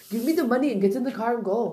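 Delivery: put-on Austrian accent in action-hero style. Pretending Arnold Schwarzenegger is selling cars, Arnold Schwarzenegger accent. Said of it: "do this accent when it's like Arnold".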